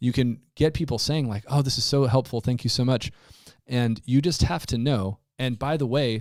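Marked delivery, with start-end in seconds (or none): none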